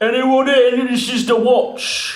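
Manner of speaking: very loud, booming, high-pitched shout. A player's character calls out, announcing the watch: booming shout. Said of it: "I'm gonna shout in a booming voice".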